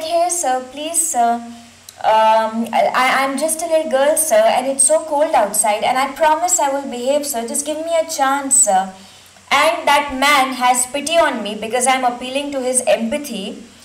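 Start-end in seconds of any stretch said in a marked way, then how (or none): none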